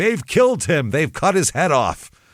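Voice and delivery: put-on woman's scream. Retelling how a woman burst into a bar, retelling a woman screaming. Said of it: "she bursts into this bar screaming".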